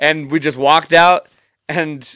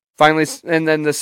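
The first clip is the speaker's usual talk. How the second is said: ordinary talk, nothing marked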